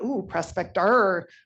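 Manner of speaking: loud pirate voice with pirate-style pronunciation of the word. Retelling how the team named their tool: pirate voice. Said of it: "how a pirate would say prospector".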